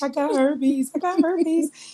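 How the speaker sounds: mock tearful crying, very high-pitched. Retelling telling the lady at urgent care, imitating own crying. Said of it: "I'm in there crying to the lady".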